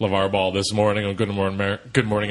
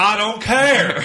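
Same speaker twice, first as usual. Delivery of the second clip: crazy, high-pitched, tossed-off delivery; 13 semitones higher, 6 dB louder than usual. Retelling a movie moment, imitating Tommy Lee Jones's crazy delivery. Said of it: "he says it in this really crazy way".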